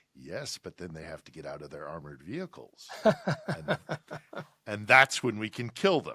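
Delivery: confiding, almost conspiratorial tone. Speaker retells what a waitress leaned over and said: retelling a conspiratorial voice. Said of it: "in an almost conspiratorial voice said".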